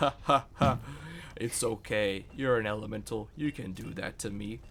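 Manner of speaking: loud delivery broken up by laughter. Voicing a stone ring seller answering a buyer: laughing while speaking. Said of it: "he laughs and he says".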